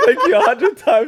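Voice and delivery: high, loud, slow, laughing and flustered. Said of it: "I think I said".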